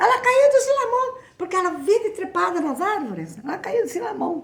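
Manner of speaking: high-pitched voice calling out.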